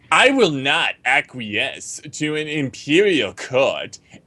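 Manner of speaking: exaggerated, derisive, overdone mocking reading. Reading a blog quote aloud from the screen, exaggerated mocking tone. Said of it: "Can I read in a really mocking voice?".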